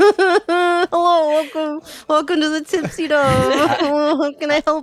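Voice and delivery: strained, cringing tone. Voicing a barkeep greeting newcomers through a cringe: forced smile while greeting. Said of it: "it's a forced smile. It's, it's like a cringe".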